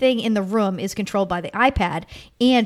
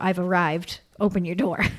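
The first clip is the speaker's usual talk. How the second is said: put-on robotic voice, pitched lower; 2 semitones lower than usual. Describing a robot that phones your room when it arrives, imitating a robot voice. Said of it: "they call your room with a robot voice".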